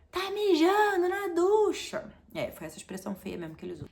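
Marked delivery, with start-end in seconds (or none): 0.2-2.1 very high, very slow, drawn-out yell from afar. Retelling what a cousin yelled from across the pool area: imitating cousin yelling. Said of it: "meu primo começou a gritar de lá".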